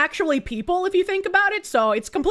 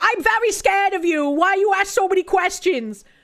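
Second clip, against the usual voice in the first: high, mocking parody in a woman's voice; 5 semitones higher than usual. Retelling how the woman in the clip reacted: imitating the woman. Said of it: "And this woman is like".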